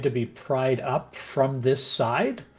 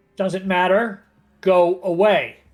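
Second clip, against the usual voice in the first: angry voice, higher and louder; 5 semitones higher, 5 dB louder than usual. A character behind a door refuses the rescuers, in an angry voice. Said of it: "there's somebody up here and they're angry".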